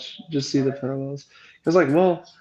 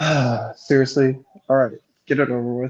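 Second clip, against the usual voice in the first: put-on disappointed father tone. Imitating a character who goes along with a plan: imitating a disappointed dad. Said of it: "more disappointed dad".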